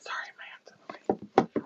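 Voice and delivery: soft, hushed, whispered aside. Interrupting a chat about the weather to apologize, whispering. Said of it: "I don't know why I'm whispering".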